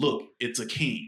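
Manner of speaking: ordinary talk, nothing marked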